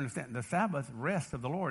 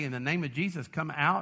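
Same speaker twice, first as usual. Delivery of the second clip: ordinary talk, nothing marked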